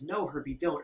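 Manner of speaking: ordinary talk, nothing marked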